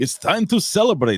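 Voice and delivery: put-on roughly German accent. Retelling meeting a big guy, the speaker imitates the man's weird accent. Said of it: "He had this weird accent".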